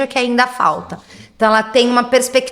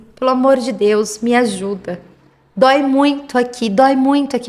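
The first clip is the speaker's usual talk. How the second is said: put-on crying, pleading, tearful, begging voice. Retelling what she said after crying all night, imitating a tearful plea. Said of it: "porque ela chorou a noite inteira".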